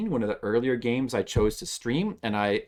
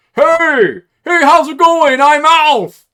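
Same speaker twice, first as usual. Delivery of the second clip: very high, loud, slow, booming character voice; 18 dB louder than usual. Showing someone an impression of an alien from Melmac, in an Alf voice. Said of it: "let me do my impression of him".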